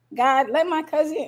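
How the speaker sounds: ordinary delivery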